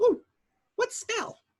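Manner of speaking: very high-pitched, assumed put-on voice. Retelling what someone asked, in a high-pitched put-on voice. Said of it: "in this high pitched, almost just in the high pitch".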